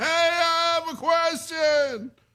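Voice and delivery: acted, very high, very slow drawn-out scream. Imitating the caller who sounded like he was screaming: imitating a caller screaming. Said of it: "Did it not sound like he was going".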